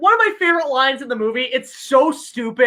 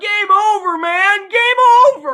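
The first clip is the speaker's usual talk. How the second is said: big, loud, high-pitched belted delivery; 8 semitones higher, 5 dB louder than usual. Quoting a favorite line from Aliens: imitating Bill Paxton as Hudson. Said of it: "he made that line infamous, Bill Paxton".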